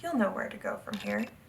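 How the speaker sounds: ordinary talk, nothing marked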